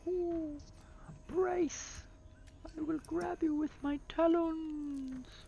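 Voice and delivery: very high, loud owl voice. Narrating a story, voicing a talking owl as it spreads its wings. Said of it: "That's my best owl voice".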